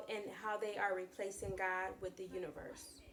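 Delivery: ordinary delivery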